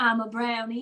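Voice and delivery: put-on southern US accent. Playing a brownie at the North Pole, answering questions: Southern accent. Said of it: "with a Southern accent".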